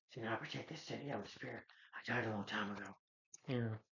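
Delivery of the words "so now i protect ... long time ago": exaggerated, over-the-top hammy superhero voice. Retelling a movie hero's lines: over-the-top Batman voice. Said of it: "He's doing an over-top voice".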